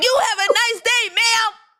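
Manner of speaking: put-on forceful, bold voice. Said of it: "She said it with her chest".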